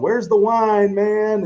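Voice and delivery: play-acted very high, drawn-out drunken yell. Retelling how a fellow instructor played a drunk in a training scenario, imitating a drunk yelling. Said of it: "acting like he was drunk and yelling".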